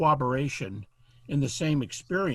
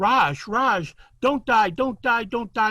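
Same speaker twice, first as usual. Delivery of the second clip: mock screaming and crying, higher, louder, slower; 8 semitones higher, 6 dB louder than usual. Telling a story, the speaker voices a mother holding her son, imitating her screaming and crying. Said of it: "she's screaming and crying".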